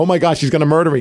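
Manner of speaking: ordinary delivery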